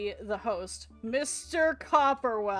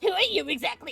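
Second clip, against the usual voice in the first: put-on character voice, higher pitch; 5 semitones higher than usual. Speaker does a quick impression for the other speaker: Vexel impression. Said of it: "I'm gonna do just a Vexel impression".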